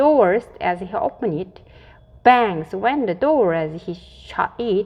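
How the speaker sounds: plain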